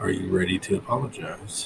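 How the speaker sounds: disappointed daddy-like voice. Voicing a little voice in a sleeper's head: disappointed daddy tone. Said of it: "essentially a disappointed daddy tone".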